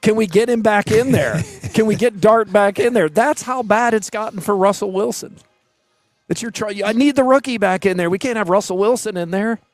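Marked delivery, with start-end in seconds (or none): 0.0-3.1 mock desperate, frantic shouting. Recounting a man yelling at the team doctor in the tent, retelling a yell. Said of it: "because he's yelling".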